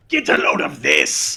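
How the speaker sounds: rough-throated, blaring loud voice. Asked to show his Eggman voice, the voiceover performer does it: Eggman voice. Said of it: "Show us your Eggman voice".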